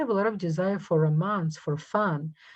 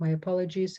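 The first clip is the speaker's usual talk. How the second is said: ordinary delivery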